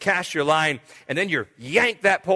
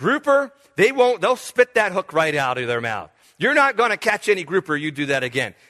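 ordinary talk, nothing marked

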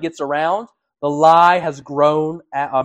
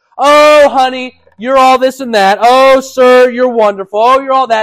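sugary, insincere, gushing voice, high and loud; 8 semitones higher, 8 dB louder than usual. A speaker on lying acts out the insincere compliments people give, in mock flattery. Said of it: "To flatter them".

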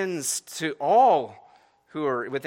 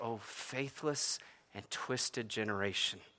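acted, very hushed, exasperated, disappointed lament; 5 semitones lower, 15 dB quieter than usual. Quoting Jesus's words about the disciples' failure, acting out exasperation. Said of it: "the exasperation in his voice".

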